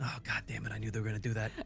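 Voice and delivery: said quietly under the breath. After both girls answer yes at once, he mutters under his breath so they can't hear. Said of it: "He says that under his breath".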